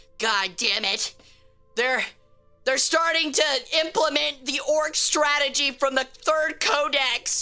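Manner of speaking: weary, grizzled veteran commander voice. Acting out a human commander watching the robots attack: grizzled human commander voice. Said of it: "the human commander's sitting there, like, grizzled".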